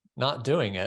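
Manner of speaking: put-on flat deadpan delivery. Retelling answering his question about programming, retelling a deadpan reply. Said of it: "I looked at him deadpan".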